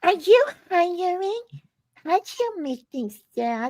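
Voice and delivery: very high, put-on, fake little voice. Echoing the comments, the speaker imitates Areola's little fake voice. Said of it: "Like her little fake voice".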